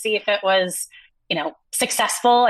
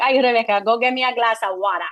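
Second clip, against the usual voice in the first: put-on odd, strange Boston accent. Imitating your father calling to rebecca, father's strange accent. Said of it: "he had the strangest accent".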